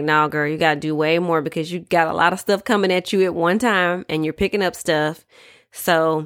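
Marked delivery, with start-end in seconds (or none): none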